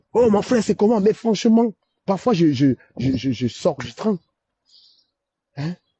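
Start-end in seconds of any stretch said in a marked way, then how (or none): 0.2-1.8 put-on hearty, high-pitched, mild half-shouted yell. Describing quiet train passengers, then acting out a Cameroonian shouting. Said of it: "il va se mettre à crier".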